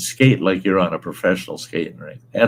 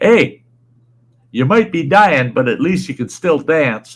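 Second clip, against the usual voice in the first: loud, hollered, pitched-up yell; 8 semitones higher, 6 dB louder than usual. Retelling what a neighbor called out from his truck: imitating someone yelling. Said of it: "he yells at me".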